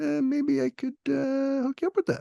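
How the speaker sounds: very high, squeaky put-on voice. Retelling what the artist representative offered on a factory tour: Phil impression. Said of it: "this is my Phil impression".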